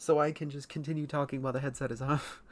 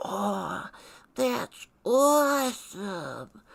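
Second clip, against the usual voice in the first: put-on high, loud, thrilled, excited little-kid voice; 6 semitones higher, 5 dB louder than usual. Retelling watching ads as a kid: imitating own childhood voice. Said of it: "and I'm like".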